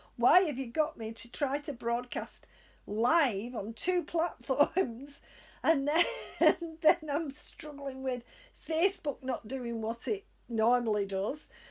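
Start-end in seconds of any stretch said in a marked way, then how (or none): none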